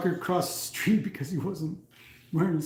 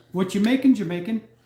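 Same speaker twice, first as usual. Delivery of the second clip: put-on innocent little girl voice, higher and louder; 5 semitones higher, 6 dB louder than usual. Retelling a daughter springing into the kitchen: innocent little girl voice. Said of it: "innocent little girl voice".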